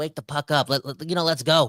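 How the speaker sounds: normal talking voice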